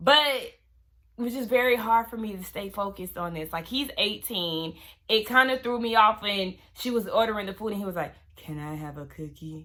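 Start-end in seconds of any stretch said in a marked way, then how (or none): 8.4-9.7 acted-out, very quiet, dry flat monotone. Retelling how an eighteen-year-old asked for a cookie, imitating a flat monotone. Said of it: "his monotone dryness".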